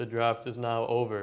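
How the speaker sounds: slow, flat, robotic, bored monotone. Retelling how the commissioner ended the draft: imitating a monotone announcement. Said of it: "monotone and kind of boring".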